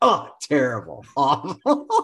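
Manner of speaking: blunt, harsh, brutally honest, no-nonsense tone, swooping pitch. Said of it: "is just brutally honest".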